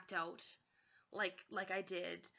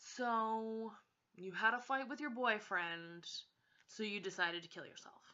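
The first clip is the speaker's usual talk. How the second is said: smug, self-satisfied, with drawn-out "so". Retelling what a psychiatrist said: imitating someone speaking smugly. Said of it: "so smugly saying".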